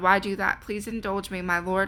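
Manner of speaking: plain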